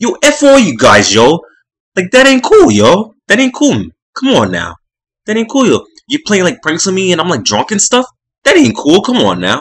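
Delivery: put-on loud, shrill, swooping angry Boston accent. Retelling how Johnny reacted on learning of the prank, imitating Johnny's angry Boston accent. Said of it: "you got the Boston accent".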